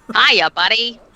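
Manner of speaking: high-pitched, loud, full Boston accent. Riffing on a creepy sewer scene, speaker does Tim Curry voice in Boston accent. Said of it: "that weird like high pitched thing he does, but just like as a Boston accent".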